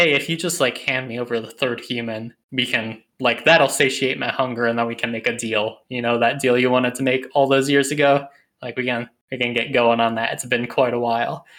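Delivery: ordinary talk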